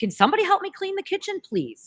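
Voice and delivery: acted, very high-pitched, curt, edgy little yell. Speaker recalls being edgy with the kids, retelling own yelling at the kids. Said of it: "yelling a little bit of yelling at the kids".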